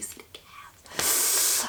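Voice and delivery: very soft, slow, whispered mock scream.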